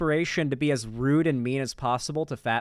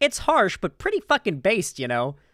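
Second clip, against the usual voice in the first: put-on Canadian or Wisconsin accent; 4 semitones higher than usual. Quoting a woman's reaction to a guy's statement: Canadian or Wisconsin accent. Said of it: "like, Wisconsin accent for her there".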